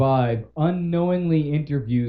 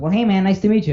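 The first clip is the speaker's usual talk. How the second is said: put-on high, pitched-up cartoon boy voice; 6 semitones higher, 4 dB louder than usual. Retelling a woman greeting a kid selling candy bars, in a Bart Simpson voice. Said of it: "and does it in the voice".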